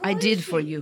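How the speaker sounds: low voice with cartoonish Russian vowels. Acting a scene, answering another character in Natasha's Russian accent. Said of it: "do your accent".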